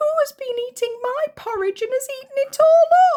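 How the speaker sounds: tiny, very high voice, a bit loud. Narrator reading the three bears story, voicing Baby Bear: tiny little voice. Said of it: "said in a tiny little voice".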